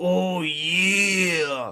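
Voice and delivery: loud, high "oh yeah" with "yeah" drawn out. Retelling a game mod where dragons shouted: Macho Man Randy Savage voice. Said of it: "turned all the dragons into Randy Macho Man Savage".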